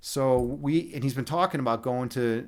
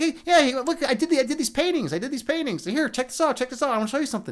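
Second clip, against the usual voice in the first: very high, excitable voice; 13 semitones higher, 3 dB louder than usual. Recalling how Alex Grey talked, the speaker mimics him: Alex Grey impression. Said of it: "talking like this".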